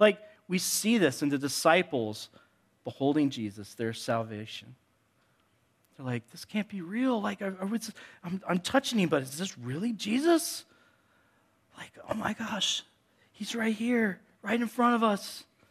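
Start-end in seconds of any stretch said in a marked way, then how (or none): 6.3-15.4 stunned, joyful, awed disbelief with raised voice. Acting out the disciples beholding Jesus, imitating joyful disbelief. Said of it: "Disbelief in the midst of joy".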